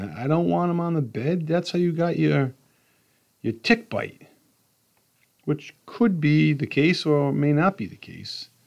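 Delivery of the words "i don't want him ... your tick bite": put-on scolding, angry screaming. Retelling what the wife says about the dog on the bed: imitating his wife yelling. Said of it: "she's yelling and screaming".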